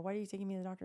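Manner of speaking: put-on angry voice. Retelling being taken to the doctor by surprise: retelling own angry question. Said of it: "I was so mad".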